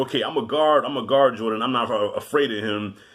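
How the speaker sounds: ordinary delivery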